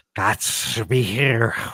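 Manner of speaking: slow, snarly, hissing, snake-like voice. Reading a story, an unseen voice hunts the frightened hero, snarly hissing snake voice. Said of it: "one snarly sounding voice said, like a hissing snake".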